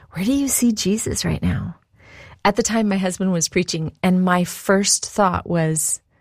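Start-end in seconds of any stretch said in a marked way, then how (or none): 0.2-1.8 mock whispering. Retelling a friend's question during church: imitating a whisper. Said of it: "she whispers".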